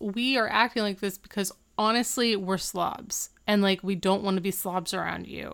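usual speaking voice

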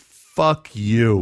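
usual speaking voice

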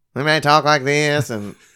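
high, nasal stock-trader voice. Asked to pretend to be someone who trades stocks: nasal stock-trader voice. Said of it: "just nasally".

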